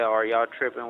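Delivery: ordinary delivery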